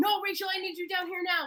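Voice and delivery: mock, high, insistent, commanding shout. Retelling how the guidance counselor yelled over the phone: imitating someone yelling. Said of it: "I can just hear him yelling".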